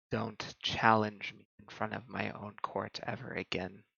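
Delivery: very quiet, hushed whisper under the breath. Narrating a roleplay scene, voicing a woman whispering to the player as she pulls back from a hug. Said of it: "she whispers".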